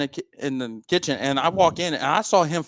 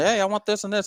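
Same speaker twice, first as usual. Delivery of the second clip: acted-out raised, high screaming call; 6 semitones higher than usual. Retelling trying to get a bartender's attention, acting out screaming at the bartender. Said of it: "So I'm screaming".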